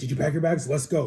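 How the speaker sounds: excited, animated speech. Retelling the dad swinging the door open: imitating an excited dad. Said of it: "he was all excited to kick me out".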